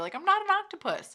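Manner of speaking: shrill, very high shout. Retelling how a restaurant coworker yelled at the manager, imitating her yelling. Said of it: "She would start yelling at the manager".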